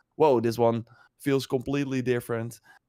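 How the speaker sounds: ordinary delivery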